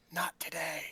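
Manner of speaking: soft, muttered half-whisper under the breath. Tibble answers a companion's suggestion to rest, half-whispered under his breath. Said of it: "under his breath, Tibble s- whispers".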